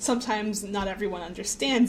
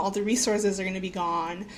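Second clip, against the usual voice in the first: plain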